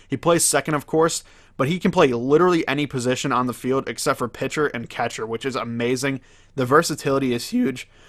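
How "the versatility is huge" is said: voice breaks briefly. Telling viewers about a baseball player's versatility; voice cracking. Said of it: "I just had a little voice crack".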